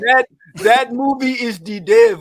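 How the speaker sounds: loud, shoddy put-on Haitian Creole accent. Doing the rest of today's show in a shitty Haitian accent, as announced. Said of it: "in a shitty Haitian accent".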